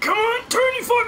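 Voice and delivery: very high, effortful, straining grunt. Playing a game with friends: straining, grunting. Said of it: "You sound like you were just trying to take a shit".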